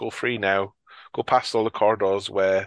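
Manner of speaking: ordinary delivery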